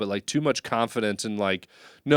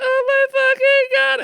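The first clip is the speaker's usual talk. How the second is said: mock hard laughing woman voice, higher and louder; 8 dB louder than usual. Imitating his mom as she laughs too hard to breathe: imitating his mom laughing hard. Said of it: "She would just be dying laughing".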